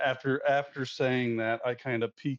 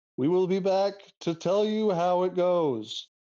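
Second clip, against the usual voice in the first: high, loud, shouted call; 7 semitones higher, 4 dB louder than usual. A player character calls back to a fortune teller while leaving, yelling. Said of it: "I yell at the fortune teller".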